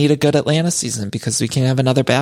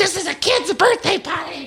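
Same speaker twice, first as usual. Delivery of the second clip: mock stifled, held-back yell, very high pitched. Retelling a woman yelling at someone, holding back a yell near the microphone. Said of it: "trying not to yell in the microphone".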